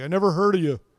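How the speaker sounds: high, loud, mocking sarcastic tone. Retelling what a designer beside him said in the report: imitating a sarcastic remark. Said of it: "says sarcastically".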